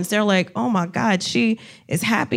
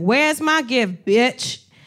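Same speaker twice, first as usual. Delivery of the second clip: put-on drunk voice. Retelling what a drunk heckler said: imitating a drunk heckler. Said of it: "super drunk".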